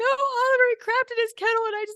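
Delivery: put-on hysterical crying. Retelling an answer to coworkers' question: imitating own past sobbing. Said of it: "I just sobbing, could barely".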